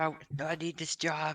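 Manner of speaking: very slow, drawn-out, pleading voice. Playing a character on his knees begging the fired-him boss: begging. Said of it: "I start begging him".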